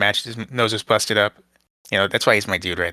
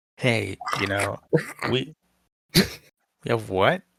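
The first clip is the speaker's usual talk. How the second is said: slow, screechy, dragged-out voice; 3 dB quieter than usual. Retelling a wrestling segment: imitating Josh Alexander's screechy voice. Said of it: "Brother did not make that noise".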